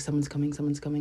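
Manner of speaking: rushed whisper. Retelling warning a friend that someone is coming: imitating own quick whisper. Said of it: "whispering it super quick".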